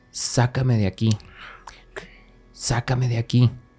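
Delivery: put-on guttural, distorted throaty voice. Telling a scary story, voicing the voice from the refrigerator, guttural and distorted. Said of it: "una voz como gutural, una voz distorsionada".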